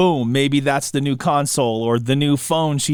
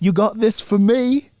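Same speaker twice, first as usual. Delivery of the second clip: put-on sweet, cute small-child voice with English accent; 8 semitones higher than usual. Retelling a young boy opening a gifted iPhone, in his cute English boy accent. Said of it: "in his cute accent".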